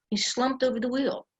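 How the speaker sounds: put-on woman's voice with Bronx accent. Quoting the woman sitting next to the speaker about the pilot, in a Bronx accent. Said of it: "in this Bronx accent".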